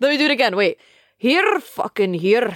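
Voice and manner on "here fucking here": put-on Scottish accent with strongly rolled r. Trying an accent again while another speaker listens, put-on scottish accent. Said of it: "That is Scottish".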